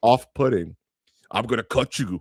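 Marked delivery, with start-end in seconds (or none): 1.3-2.2 put-on horror villain voice, lower pitch. Imitating how an actress talks in a film: Freddy Krueger voice. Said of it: "she talks like Freddy Krueger".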